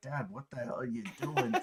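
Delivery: put-on voice, words broken up by laughter. Retelling a golf clip where Charlie laughs at his dad: imitating Charlie laughing. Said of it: "just laughing like".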